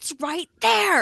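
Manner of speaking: very high-pitched, squealing scream. Retelling how they yelled at their TV while watching, retelling screaming at the TV. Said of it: "screaming at my TV going".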